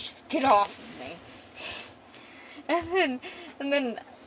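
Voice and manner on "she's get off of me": put-on mad, fighting-back, angry outburst. Retelling a fight where she gets pinned to the ground: retelling her angry outburst. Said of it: "And she's so mad".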